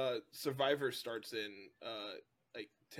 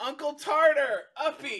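put-on very high, very loud toddler squeal; 12 dB louder than usual. Retelling how a four-year-old girl runs up asking to be carried: imitating a four-year-old girl. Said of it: "she runs up and goes".

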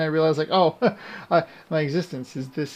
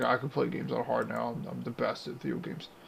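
put-on deep voice, lowered; 4 semitones lower, 9 dB quieter than usual. Retelling own past boast about playing games on hard: putting on a deep voice. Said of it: "His voice got all deep like that".

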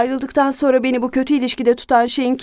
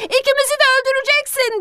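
shrill, very high, panicked shouting; 12 semitones higher than usual. The narrator shouts again after the driver gives no answer. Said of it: "diye bağırdım".

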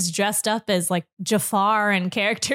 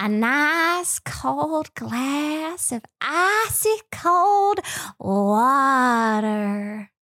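put-on cartoon voice with drawn-out "water"; 4 semitones higher than usual. Asked for a favorite cartoon character impression, doing it, in a cartoon character impression. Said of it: "What is your favorite cartoon character impression?".

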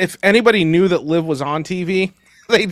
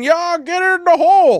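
put-on drunk yell, much higher; 12 semitones higher than usual. Ranting about spoiled pro players, imitating drunk fans yelling at them. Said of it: "drunk asses yelling".

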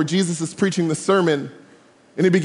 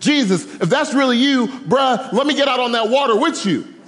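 mock yell, higher pitch; 6 semitones higher than usual. Retelling the Bible story, Peter calls out to Jesus, Peter yelling out, retold. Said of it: "he yells out to Jesus".

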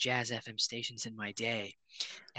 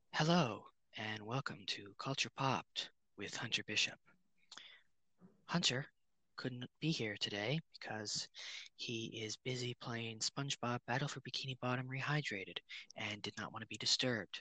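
soft jazz radio DJ style delivery; 8 dB quieter than usual. Guest host opening the podcast episode in a Jazz FM radio host voice. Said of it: "in my Jazz FM radio host voice".

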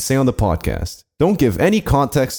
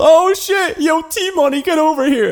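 put-on loud call, very high, drawn-out yelling. Retelling what a pro player yelled: imitating someone yelling. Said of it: "he yelled".

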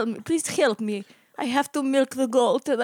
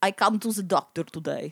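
clumsy, shaky put-on Russian accent, dropped low; 6 semitones lower than usual. As Vladimir Flemnikov, introducing himself to the doctor, in a bad accent. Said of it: "What is not very good accent".

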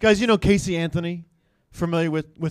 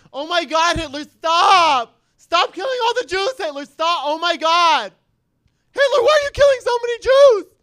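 put-on very high, loud, squealing drunk party girl voice; 13 semitones higher, 5 dB louder than usual. Speaker ends with a quick impression for the guys: drunk frat-party girl impression. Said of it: "a drunk girl at a frat party".

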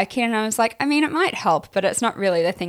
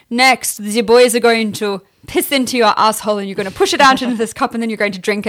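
put-on loud, laid-on-thick Russian accent; 6 dB louder than usual. Speaker retells a man's instructions after a hard cut, thick Russian accent. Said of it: "thick Russian accent".

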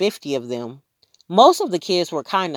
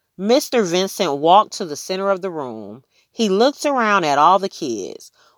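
usual speaking voice

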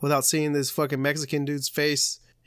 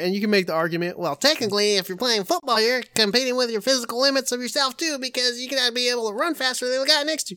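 high, pedantic, nitpicking know-it-all voice; 8 semitones higher than usual. Mid-argument, the speaker voices an imagined objector as a "well, technically" guy. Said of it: "That's a good impression".

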